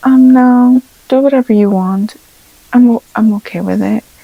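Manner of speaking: timid, shy, noncommittal, hesitant, with a stumble. Role-playing a client's answer about references: imitating a shy, very quiet woman. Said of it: "they were very shy and very quiet".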